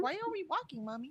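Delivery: high, put-on pet-dog voice. Voicing the dog asking its owner a question: voicing the pet dog. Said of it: "She's like".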